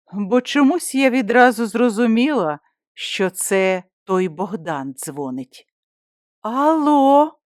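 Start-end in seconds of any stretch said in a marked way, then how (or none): 6.5-7.3 slightly shaky, trembling, pitched up, drawn out. Answering a call from an unknown number she thinks is Bogdan: slightly trembling voice. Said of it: "промовила я трохи тремтячим голосом".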